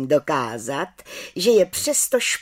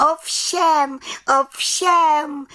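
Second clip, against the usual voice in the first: very high proud call, drawn out; 10 semitones higher than usual. The little witch answers the head witch's question, calling out. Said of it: "volala malá čarodějnice".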